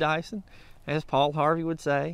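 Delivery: normal talking voice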